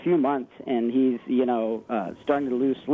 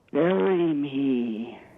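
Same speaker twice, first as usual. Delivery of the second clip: really scary put-on voice. Retelling a dream where Vern appears in the window; scary voice as Vern. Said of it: "In a really scary voice".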